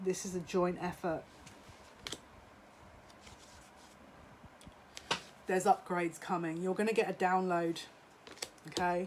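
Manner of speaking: holding back emotion. Addressing listeners of their own message, trying not to get emotional. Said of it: "I'm trying not to get emotional".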